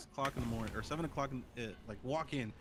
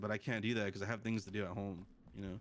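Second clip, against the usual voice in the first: plain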